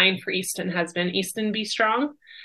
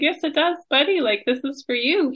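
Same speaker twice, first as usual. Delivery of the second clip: put-on tearful, pitched-up crying; 7 semitones higher than usual. Speaker retells answering a boy's question about the candles; retelling crying. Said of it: "I'm crying like".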